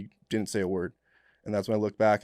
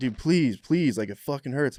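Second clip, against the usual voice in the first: loud pained yelling; 4 semitones higher, 3 dB louder than usual. Retelling a burnt colleague begging for relief: imitating someone yelling. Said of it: "he's like yelling".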